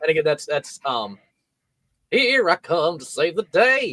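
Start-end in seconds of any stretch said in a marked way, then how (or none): 2.1-3.9 higher-pitched Southern accent. Quoting a favorite line from the show: Ainsley's Southern accent. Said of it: "but in a Southern accent".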